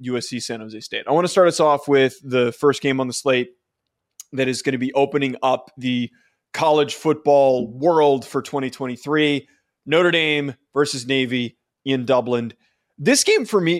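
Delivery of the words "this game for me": voice breaking and cracking up high. Introducing the first college football game of the season, bad voice crack. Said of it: "that was a bad voice crack".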